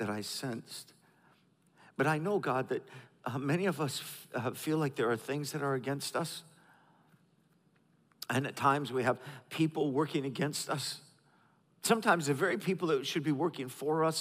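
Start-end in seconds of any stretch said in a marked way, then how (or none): 0.0-11.0 soft voice, catching and choked up with emotion. Speaker praying before teaching, choked up. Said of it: "i'm a little choked up right now".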